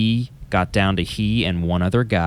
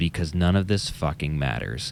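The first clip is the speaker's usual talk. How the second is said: furious, traumatized, angry lecturer's voice; 3 semitones lower, 4 dB quieter than usual. Retelling what a professor said in front of the class, imitating an angry, traumatized voice. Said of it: "in an angry, just traumatized voice".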